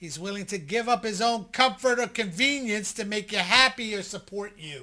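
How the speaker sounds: very loud, emphatic, hammered-home yelling. Explaining signs of a man's devotion to a listener, yelling. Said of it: "Why are you yelling?".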